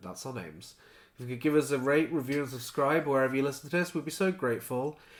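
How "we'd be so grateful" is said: ordinary talk, nothing marked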